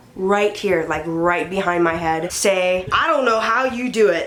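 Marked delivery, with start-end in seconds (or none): 2.9-4.3 put-on heavy, thick Russian accent, laid on thick. Retelling what a man said from right behind, in a thick Russian accent. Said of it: "this thick Russian accent".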